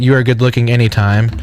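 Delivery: ordinary talk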